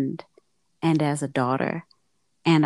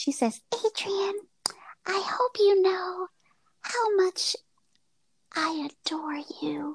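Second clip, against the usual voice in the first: put-on woman's voice, much higher, quieter; 4 dB quieter than usual. Retelling what she said when he dropped off groceries; imitating her voice. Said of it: "And that's her voice".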